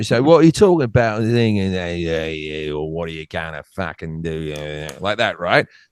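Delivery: put-on drunk Cockney accent. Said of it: "Drunk, drunk Cockney is Australian".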